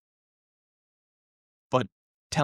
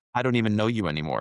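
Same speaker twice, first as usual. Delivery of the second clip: plain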